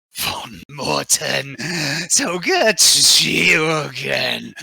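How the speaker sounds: very slow, loud chorus of layered voices. Voicing a laughing villain who greets the charging party: many voices speaking at once. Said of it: "his voice, uh, is like many different voices speaking at once".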